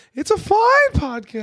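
squeaky, very high, dragged-out, drawn-out voice. Teasing a co-host whose voice went up on a line, unusually high voice. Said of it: "your voice went up so high right there. Like".

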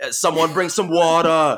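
attempted Boston accent. Retelling what a woman said, the speaker tries an attempted Boston accent. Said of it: "it's difficult for me to impersonate Boston accents".

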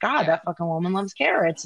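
ordinary delivery

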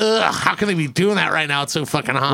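ordinary delivery

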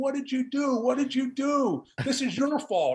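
play-acted high, accusing woman's scream. Retelling how a woman stood over the speaker: imitating a woman screaming. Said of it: "the woman is screaming".

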